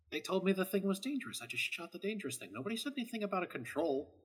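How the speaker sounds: soft, sidelong, half-whispered aside. Player retelling a game scene where Kara inches over to Marcus, Kara half-whispering. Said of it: "just kind of whispers".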